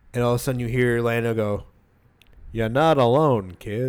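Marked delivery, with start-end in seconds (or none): 2.5-3.8 bad put-on voice, slow and drawn out. Retelling a movie scene where Lando speaks: bad Billy Dee Williams impression. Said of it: "I do a really bad Billy D Williams".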